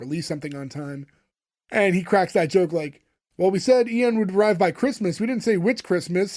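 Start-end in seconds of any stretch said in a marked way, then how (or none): none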